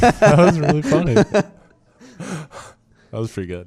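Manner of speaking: high-pitched, laughing hard through the words.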